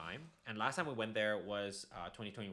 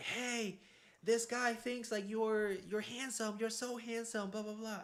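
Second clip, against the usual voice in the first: play-acted scream, very high-pitched; 13 semitones higher than usual. Retelling how university students catcalled from across the street: imitating people screaming. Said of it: "they started screaming, like".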